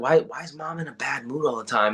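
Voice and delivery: imitated whispering. A mother acts out her family whispering about her; retelling a whisper. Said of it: "Everyone whispering like".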